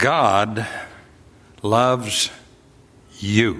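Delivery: very slow, every word deliberately underscored. In a message meant to be as positive as possible, spoken slowly. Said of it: "I said that slowly".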